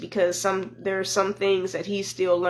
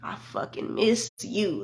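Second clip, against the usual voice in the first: strongly stressed, somewhat quiet; 4 dB quieter than usual. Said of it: "he put, like, emphasis on it".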